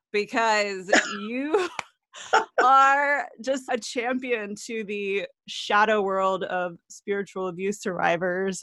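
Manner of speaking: excited, starstruck, gushing fangirl excitement. Greeting today's guest before talking with them, fangirling. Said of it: "I'm going to have to take 10 seconds and just fangirl".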